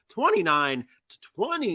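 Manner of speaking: voice cracking. Reading out a game's final score, voice cracking. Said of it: "My voice cracked on that one".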